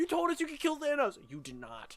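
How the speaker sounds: put-on angry outburst. Retelling own reaction to a character's arrival: imitating own angry rant. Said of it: "Pissed me off".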